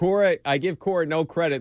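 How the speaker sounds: usual speaking voice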